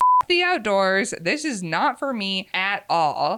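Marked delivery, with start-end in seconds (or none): none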